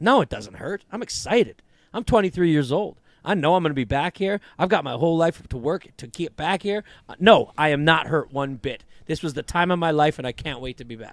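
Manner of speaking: flat throughout, no upward lift. Retelling a player's answer about a playoff loss: imitating Anthony Edwards saying it flatly. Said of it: "And he said flatly".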